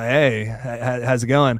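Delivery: slow, throaty surfer-bro drawl, low in the throat. Describing an actor's voice to chat: throaty Matthew Lillard impression. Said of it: "like, in the back of the throat".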